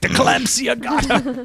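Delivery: high, slow, laughing goofy put-on voice.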